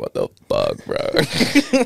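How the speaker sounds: very slow, rough, creaky vocal fry drawl. Showing how they talk among friends, with creaky vocal fry. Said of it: "you just vocal fry it out, like".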